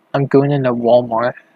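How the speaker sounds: ordinary delivery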